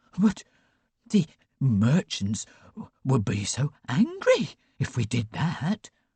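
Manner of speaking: trembling, halting voice, breaking mid-phrase. Reading a story aloud, voicing a minister: quavering voice. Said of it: "a minister quavered".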